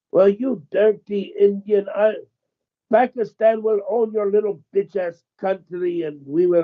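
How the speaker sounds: acted-out furious rant, high-pitched. Recounting an exchange with a scammer, the speaker imitates the man's angry reply. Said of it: "he got so pissed".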